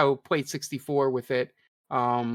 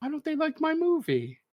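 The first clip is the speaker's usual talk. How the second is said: put-on old man voice, higher; 13 semitones higher, 3 dB quieter than usual. Retelling a story about Miyamoto: imitating Miyamoto as an old man. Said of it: "it sounds such genuine old man thing".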